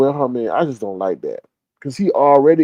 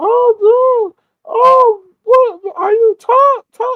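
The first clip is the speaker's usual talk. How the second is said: put-on shrill, very high, very slow, drawn-out scream; 5 dB louder than usual. Retelling what the wife did after crashing the car: imitating someone screaming. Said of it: "she started screaming".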